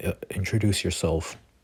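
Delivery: ordinary talk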